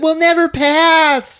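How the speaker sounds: very high, loud shriek with "pass" stretched out. Retelling a movie scene in the club line: imitating someone screaming. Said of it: "screaming this out in the club line".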